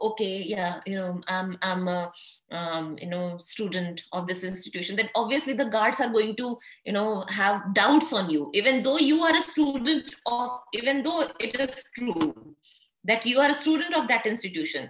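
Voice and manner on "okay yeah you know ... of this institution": stumbling, unsure, unconfident, hesitant mumbling. Showing how telling a guard you're a student sounds unsure: unconfident mumbling. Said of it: "lose your confidence and you start mumbling".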